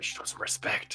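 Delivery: whispered speech. Voicing Hero telling a companion to show respect: whisper. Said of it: "Hero will whisper".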